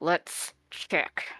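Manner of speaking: through gritted teeth. Asked whether the item went in the bag of holding, Sedge answers through gritted teeth. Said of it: "Sedge says through gritted teeth".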